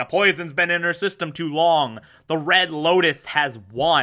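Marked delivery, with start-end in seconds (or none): none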